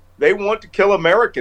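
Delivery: ordinary delivery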